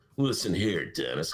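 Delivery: casual, offhand, off-mic delivery. Retelling pre-show planning, imitating own off-mic talk. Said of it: "That's how I talk to him off mic".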